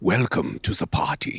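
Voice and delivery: put-on over-the-top German accent. Demonstrating the voice used for a role, a campy German voice. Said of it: "just this campy German voice".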